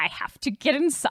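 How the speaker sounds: super creepy, needling. Retelling a movie scene where the djinn badgers a guard: imitating a creepy djinn. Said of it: "He's being super creepy about it".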